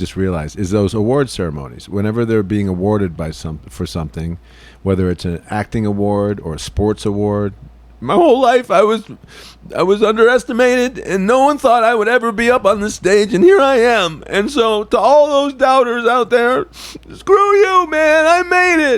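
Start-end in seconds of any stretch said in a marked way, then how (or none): 8.0-19.0 crying, tearful, very high and loud. Acting out an award winner's acceptance speech, imitating award-speech crying. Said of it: "it's like that kind of crying".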